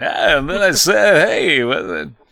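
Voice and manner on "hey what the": put-on drunk sportscaster voice. Retelling an earlier impression attempt: drunk Harry Caray impression. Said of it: "a drunk Harry Carey".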